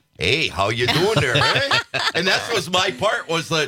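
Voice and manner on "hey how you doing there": friendly Midwestern Wisconsin accent with a drawl. Like a performer remembering a lost ad job, doing a cheerful, broad Midwestern greeting the way it would have sounded in the spot. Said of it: "a Wisconsin version of the Wisconsin accent".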